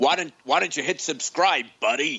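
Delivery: put-on New York accent. Asking listeners to hit subscribe, in a New York accent. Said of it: "that's my New York accent".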